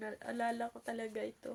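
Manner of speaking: speaking through tears, crying. Sharing a personal testimony with viewers, crying while talking. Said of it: "I'm crying talaga".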